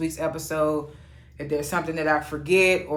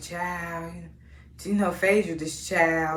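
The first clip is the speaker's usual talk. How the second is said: put-on mocking, scornful, catty belittling tone; 3 dB quieter than usual. Retelling how a cast member mocks Phaedra: imitating someone mocking. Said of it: "she mocks Phaedra".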